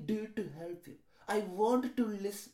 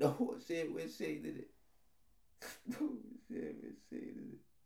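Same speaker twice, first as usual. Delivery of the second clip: tearful, repeated, breathy, barely whispered crying; 5 semitones lower, 8 dB quieter than usual. Speaker moments before being told not to cry: crying. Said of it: "Don't cry, [name]. Don't cry".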